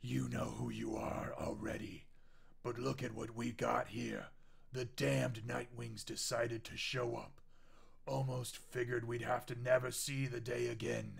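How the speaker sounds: huge, rough, creaky, massive demon voice. Game narrator voices a massive demon addressing the Nightwings: massive demon voice. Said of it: "How am I going to do this voice?".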